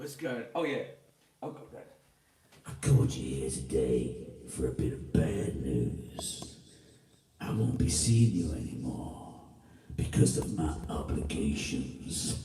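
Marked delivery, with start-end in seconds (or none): 2.7-12.4 very low, deep bass voice, slow delivery. Showing off a voice by saying a made-up line in a very low voice. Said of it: "What else has got a low voice in?".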